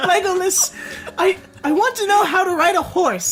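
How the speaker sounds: put-on very high, far-off girl's voice.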